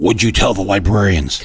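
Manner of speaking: acted low, angry, irate phone voice. Retelling an angry phone call from a publisher, acting angry. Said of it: "there's an angry voice on the other end of the line".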